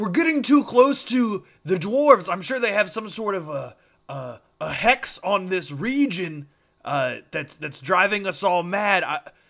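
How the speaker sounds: shouting. Role-play player's character yells to the gnolls mid-fight, yelling.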